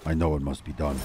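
dramatic anime-style whisper. Mid-game, comparing himself to an anime guy, dramatic anime-guy whisper. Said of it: "whispering to himself".

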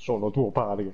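booming deep voice. Retelling a moment with friends, the speaker says the line in a big deep voice. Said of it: "col vocione".

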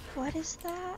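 hushed whisper. In a roleplayed scene, the character leans closer and asks, whispering. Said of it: "He's gonna lean closer and whisper".

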